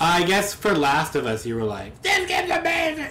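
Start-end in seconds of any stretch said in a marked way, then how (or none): 2.0-3.1 bad, awful, very high-pitched put-on voice. Imitating the other person's reaction to Last of Us, horrible impression. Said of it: "That's a horrible impression of you".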